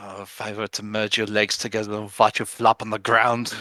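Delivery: hushed, grumbled mutter under the breath. Imitating another character's words, muttering under his breath. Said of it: "muttering under his breath".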